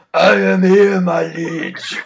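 very loud, very slow, booming, drawn-out villain voice. Insisting fans read Goldar's comic lines in Kerrigan's voice, doing Kerrigan Mahan's Goldar voice. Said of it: "you don't read them in Kerrigan's voice".

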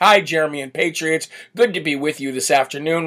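ordinary talk, nothing marked

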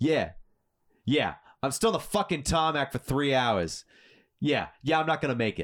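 put-on thick New York accent. Retelling a passenger's complaint after hours on the tarmac: thick New York accent. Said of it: "thick New York accent".

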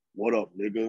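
deep, low half-whisper. Retelling the Fenway mascot sneaking up behind them, in Tessie's deep half-whisper. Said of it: "in a deep ass voice".

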